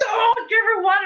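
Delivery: very high, shrill, loud yelled delivery. Speaker recalls a nurse yelling at them by a patient's bed, imitating a nurse yelling. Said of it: "Like she yelled at me".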